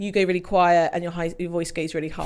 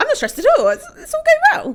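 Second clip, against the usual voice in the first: mock high-pitched stressed voice, higher and louder; 9 dB louder than usual. Imitating a colleague insisting he is fine: imitating a high stressed voice. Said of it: "your voice goes higher".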